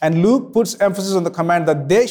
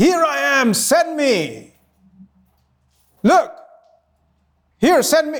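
mock, pitched-up scream with full force; 8 semitones higher than usual. Speaker retelling a prophet volunteering to be sent: acting out Isaiah screaming. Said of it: "He's screaming so loud".

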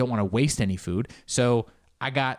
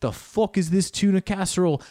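oddly timid chef voice, pitched up, rising a bit; 7 semitones higher, 4 dB louder than usual. Imitating a chef ripping into a dish: Gordon Ramsay impression. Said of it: "my Gordon Ramsay impression".

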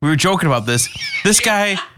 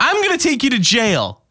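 chipper, high, cutesy puppy-talk voice; 8 semitones higher than usual. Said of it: "there's gotta be a better way to say that".

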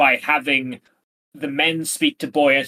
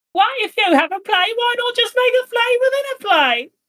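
very high, silly, ridiculous swooping caricature voice; 3 dB louder than usual. Redoing the imitation after being asked to sound more ridiculous: more ridiculous imitation of Sophie. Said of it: "you need to sound a little bit more ridiculous".

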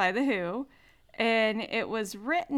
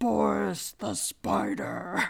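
slow, scary, gruff voice. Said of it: "really, like, scary, gruff voice".

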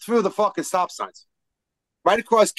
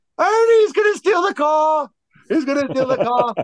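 high, loud, panicked laughing cry. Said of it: "I'm like".

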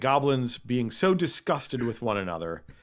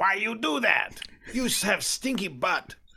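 high-pitched hollering, shouting goblin voice; 9 semitones higher than usual. Voicing a goblin who shouts back from far away, shouting. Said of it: "he really shouts".

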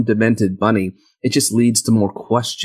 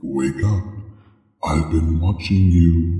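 eerie voice like two layered, low, deep, haunting; 5 semitones lower than usual. Retelling a film scene, imitating Frank's haunting voice. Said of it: "almost sounds like two voices overlaid".

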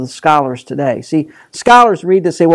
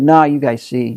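put-on sarcastic tone, lower pitch; 3 semitones lower than usual. Retelling a reply to the Pharisees, acting out a sarcastic reply. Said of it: "He's being sarcastic".

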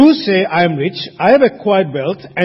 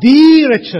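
heavy, punched emphasis on the word the; 3 semitones higher, 5 dB louder than usual. Explaining how a Greek text is translated, with stress on the. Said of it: "The emphasis is on the".

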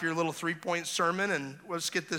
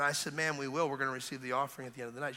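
ordinary talk

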